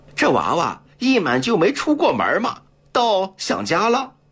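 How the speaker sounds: very high, teasing, with a laugh. Seeing his companion sit lost in thought, he teases him, laughing. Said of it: "老杜便笑着打趣道".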